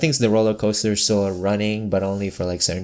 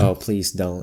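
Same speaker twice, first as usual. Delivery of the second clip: normal talking voice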